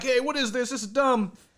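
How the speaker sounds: high pleading voice. Retelling how Sammy Zayn begged the referee: imitating Sammy Zayn begging and pleading. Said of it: "begging and pleading".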